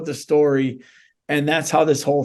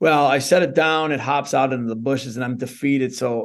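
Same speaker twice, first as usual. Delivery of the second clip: ordinary talk, nothing marked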